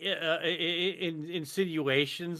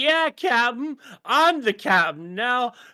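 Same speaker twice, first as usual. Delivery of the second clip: put-on stoned voice, higher and louder; 7 semitones higher, 7 dB louder than usual. Retelling how Wesley acts while high: imitating Wesley high. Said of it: "He's all high as shit, going like".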